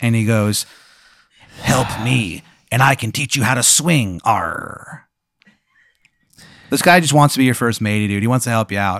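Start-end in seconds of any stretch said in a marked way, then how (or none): 1.6-5.1 put-on pirate voice, arr. Voicing a pirate character in a told adventure: pirate voice. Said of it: "A pirate".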